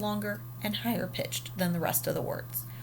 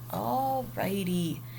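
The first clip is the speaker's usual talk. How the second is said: ordinary talk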